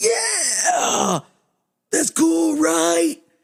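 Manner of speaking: very high, raspy, airy voice in a very slow drawl. Retelling how a professor talked when excited: imitating a professor's raspy, airy excited voice. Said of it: "raspy and airy".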